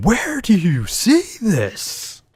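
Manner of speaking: swooping, very high, very slow drawn-out holler. Retelling a card game where the other player yelled: imitating someone yelling.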